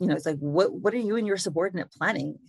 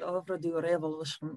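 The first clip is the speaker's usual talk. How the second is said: put-on thick Irish accent, quieter; 8 dB quieter than usual. Reading a character's lines aloud, doing McTrevor in a butchered Irish accent. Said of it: "Y'all are butchering the Irish accent".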